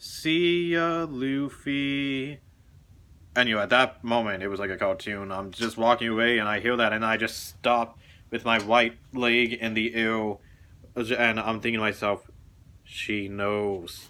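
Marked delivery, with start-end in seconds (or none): 0.0-2.4 shy, sweet, cute, timid small voice. Recalling her goodbye as the speaker walked away, imitating a cute, timid voice. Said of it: "in the cutest, most timid voice you can imagine".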